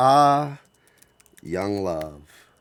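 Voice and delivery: cheeky, smart-alecky know-it-all tone. Making up a line for an older character laughing at a young couple, smart-alecky. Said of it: "it's just a real smart alecky".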